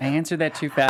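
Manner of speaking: ordinary talk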